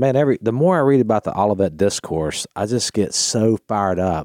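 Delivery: ordinary delivery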